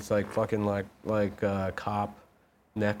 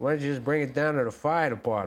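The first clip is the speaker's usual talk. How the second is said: put-on old-timey 1940s detective voice, higher; 5 semitones higher than usual. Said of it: "I could be an old, old-timey forties".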